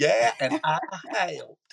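high, loud, hillbilly-style Southern accent. Retelling a commercial where a little girl speaks: corn pone Southern accent. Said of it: "Like that".

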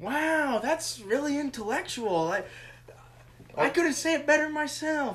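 relaxed, easy, drawn-out drawl. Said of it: "[name] voice; [name] impression; put-on laid-back drawl".

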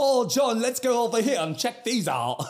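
very high, terrible put-on British accent. Retelling how the brother joined in acting British, in Joe's awful fake British accent. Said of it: "who has a awful, awful accent, is like".

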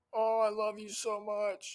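high-pitched, drawn-out shout. Joking about what you can't say during doggy style: pretend shouting. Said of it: "just shouting like".

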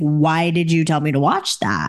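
ordinary delivery

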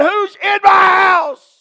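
long, high-pitched scream. Retelling how Brother Ed woke to an intruder: retelling Brother Ed screaming. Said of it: "just screaming".

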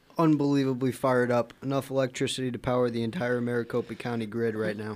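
usual speaking voice

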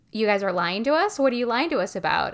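ordinary talk

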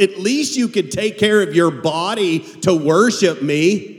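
slow, heavily sarcastic, ironic drawl. Paraphrasing the scripture verse to show its meaning: sarcastic tone. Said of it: "it's sarcastic, going".

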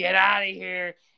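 rough, grating, creaky growl. Recounting a tense scene, the speaker acts out a woman ordering people out, retelling a growl. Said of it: "She growls".

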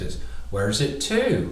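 put-on attempt at a Bristol accent. Taking turns with another speaker at the best Bristolian accent, going first, Bristolian accent. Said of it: "in the best Bristolian accent".

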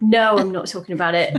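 put-on angry outburst. Retelling refusing to talk about it after a partner's urging: imitating an angry refusal. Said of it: "really angry".

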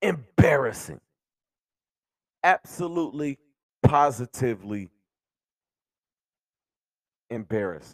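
half-gone, worn-down voice strained and pushed hard. Ranting at fans about a total team embarrassment: raising a half-gone voice. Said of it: "but I'm raising my voice".

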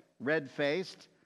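ordinary delivery

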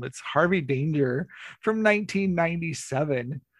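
on-air radio DJ announcer delivery. Someone introducing an album and its band, in a radio DJ voice. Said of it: "I'm busting out radio voice".

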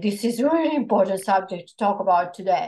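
forceful, bearing down with full intensity. Speaker relays what Archangel Mikael was saying, doing an intense Archangel Mikael impression. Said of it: "That's my impersonation of him".

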